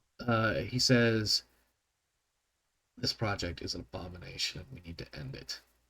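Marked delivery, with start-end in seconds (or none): 3.0-5.6 very quiet, hushed, barely above a whisper. Narrating a character's words to the players in a game, in a very quiet tone. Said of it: "he says in a very quiet tone".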